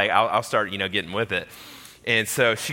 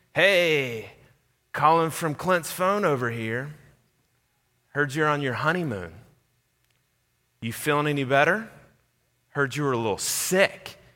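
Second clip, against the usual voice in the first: eerie, menacing, super creepy voice, hey drawn out long; 4 semitones higher, 4 dB quieter than usual. Retelling a phone call played on speaker, in a super creepy voice. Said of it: "it's this super creepy voice saying".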